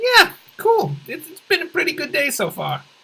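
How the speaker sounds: very high, casual tone. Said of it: "the other guy's supposed to go like".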